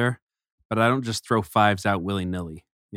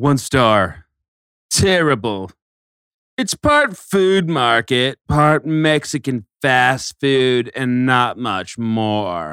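funny, louder snobby jerk voice; 3 semitones higher, 6 dB louder than usual. Reading a harsh restaurant review aloud after being asked: funny jerk face voice. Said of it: "read this review in a funny jerk face voice".

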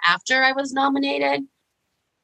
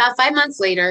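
normal talking voice

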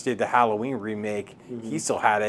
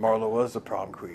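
put-on Scottish-accented voice. Quoting a favorite movie line to friends: Sean Connery impression. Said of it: "That was a good Sean Connery".

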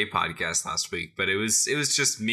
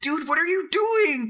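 put-on yelling voice, much higher. Acting out yelling at teammates in Rocket League: Nox impression. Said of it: "That's the first time I've ever heard you do an impression of me".

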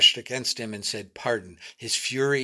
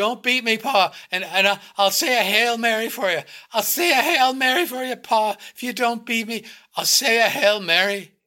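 very high, loud, trembling, fright-shaken, terrified pleading; 10 semitones higher, 5 dB louder than usual. A boy being beaten begs his Pa, voice shaking with fright. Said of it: "his voice shook with fright".

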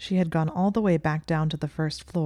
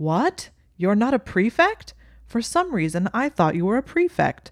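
cringingly loud, swooping chatter; 5 semitones higher, 4 dB louder than usual. Reading a story aloud, a ghost questioning a student out after curfew: cringingly loud. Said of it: "[name] glanced around and found that nearly headless [name] had apparently seen fit to disappear without a word. / [name] said, / following as his voice became cringingly loud once again. / (opening w".

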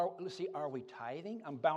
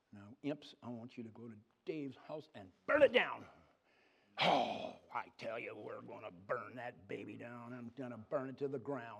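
devil voice, lower pitch; 5 semitones lower than usual. Telling a story about a woman here last sunday, voicing the devil. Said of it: "and the devil says".

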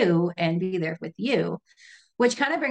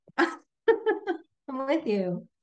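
high, slow laughing through the words. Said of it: "I'm laughing because I'm, like, so uncomfortably".

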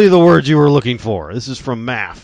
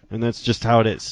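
ordinary talk, nothing marked

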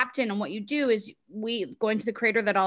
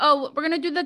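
fake, higher-pitched Dutch accent; 6 semitones higher, 3 dB louder than usual. Imitating a friend who speaks with a dutch accent: imitating a friend's dutch accent. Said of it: "she's like".

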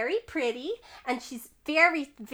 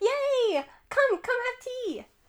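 put-on very high-pitched, excited child voice; 11 semitones higher than usual. Voicing an excited character welcoming a guest to tea: Lizzie voicing excited child. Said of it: "Lizzie claps her hands, and she's like".

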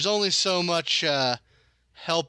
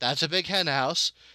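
plain

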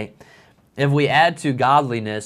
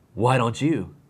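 put-on rude, unfriendly tone. Retelling a sister's answer from the car: imitating Sarah's not-nice retort. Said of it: "she responds in a not so nice way".

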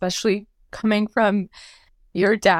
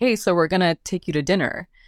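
usual speaking voice

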